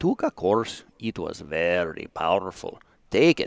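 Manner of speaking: bad put-on Polish accent. Retelling what a Polish fellow said to him, in a bad Polish accent. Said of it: "That was your best Polish voice".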